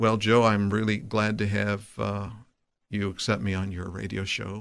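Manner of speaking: flat, unvarying, dead-level monotone delivery. Showing a still-handed, still-faced speaker on a radio show: flat monotone voice. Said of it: "the voice is very monotone".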